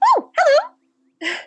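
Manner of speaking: tiny, loud, very high fairy voice. Voicing a little fairy who looks up at the party: little fairy voice. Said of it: "one of the little fairies kinda looks up".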